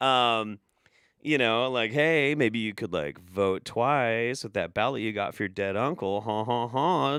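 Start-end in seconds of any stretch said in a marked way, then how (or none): 1.9-7.2 mock tempting demon voice, lower pitch. Acting out demons running around tempting people: put-on tempting demon voice. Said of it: "being all tempting and shit".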